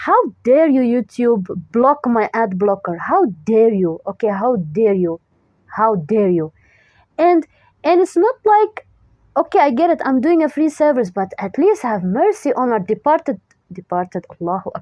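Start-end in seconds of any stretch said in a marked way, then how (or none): 0.0-6.5 furious, full of rage. Complaining that YouTube blocks their ad blocker, enraged. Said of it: "the rage that I'm feeling right now".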